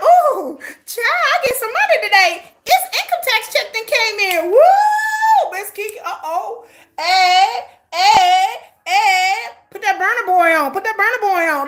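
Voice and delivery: excited sing-song voice. Acting out own reaction to getting money: imitating own excited self. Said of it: "that makes me excited".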